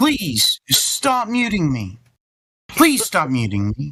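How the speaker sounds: pleading, whining tone. Begging the others in a voice call to stop muting: whining. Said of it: "Stop whining in the microphone".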